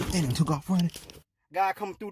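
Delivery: ordinary delivery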